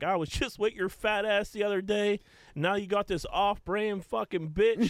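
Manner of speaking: very high-pitched, unhinged, snapping mock rant. Retelling a porn star calling a famous man, mock snapping at someone. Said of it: "calls and snaps out like".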